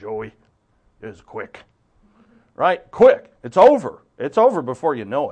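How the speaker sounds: put-on Irish brogue. Quote your immigrant father answering how fast his life was, imitating dad's old irish brogue. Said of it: "And his old Irish brogue".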